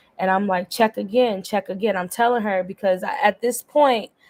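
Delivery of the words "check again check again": normal talking voice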